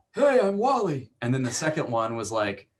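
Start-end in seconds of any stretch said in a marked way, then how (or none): 0.1-1.1 very high put-on old-timer voice. Recalling the original voice first tried for an old man character: old man voice. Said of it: "the original voice was like".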